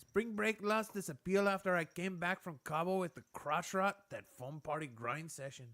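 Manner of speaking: put-on Mexican accent through the whole line. Speaker taking a turn reading the joke to beat the other's try, Mexican accent. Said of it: "Let me try that because I think I can do a better job".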